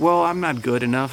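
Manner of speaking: ordinary delivery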